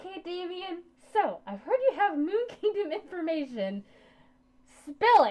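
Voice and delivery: very high, loud, smothered-sounding muffled voice. Voicing a character heard loudly through a closed door: muffled voice. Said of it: "I'm gonna muffle my voice a little bit here".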